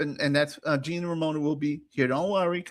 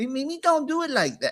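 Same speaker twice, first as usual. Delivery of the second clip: put-on Australian voice, pitched higher; 9 semitones higher than usual. Retelling a guest's lunch complaints, doing an Anus Young impression. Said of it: "he says".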